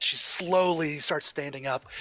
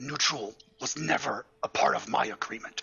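low, deep, rough, raspy voice; 3 semitones lower than usual. Game master voicing a telepathic voice the players hear, deep raspy voice. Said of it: "you hear a deep and raspy voice".

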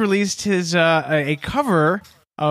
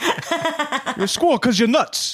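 put-on New Jersey accent, pitched up; 5 semitones higher than usual. Imagining someone saying this to a partner in a fight, in a New Jersey accent. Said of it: "that's a New Jersey accent as well".

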